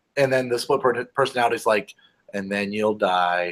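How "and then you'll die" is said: mock low, flat, affectless machine voice. Describing the AI's other personality, imitating a deadpan AI. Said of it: "It's just very deadpan".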